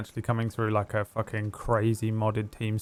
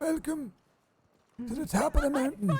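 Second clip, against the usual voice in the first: put-on old man voice, very high pitched. A host whose co-host loves this voice, old man voice. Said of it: "I love your old man voice".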